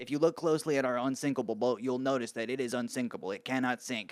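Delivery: mock-condescending text-to-speech voice. Mimicking the text-to-speech voice in a clip being shown, imitating condescending TTS voice. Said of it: "sounds so condescending. He sounds mean".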